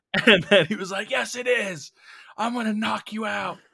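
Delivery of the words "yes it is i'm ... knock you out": furious screaming, loud yell. Retelling what a man said during an argument at work, imitating someone screaming. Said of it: "he is screaming at me".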